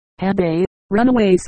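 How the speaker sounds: ordinary delivery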